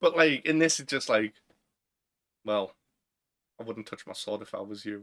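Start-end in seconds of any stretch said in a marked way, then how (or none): 2.4-5.0 low, much softer, cool understated delivery. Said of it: "he's just being too cool".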